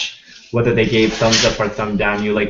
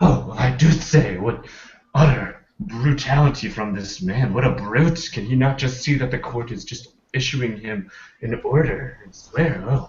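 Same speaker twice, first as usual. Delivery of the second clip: mock highfalutin, nose-in-the-air, lofty, snooty voice; 2 semitones higher than usual. Voicing an appalled Victorian audience watching the scene, mock highfalutin, nose-in-the-air voice. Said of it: "highfalutin and kind of nose turn uppy".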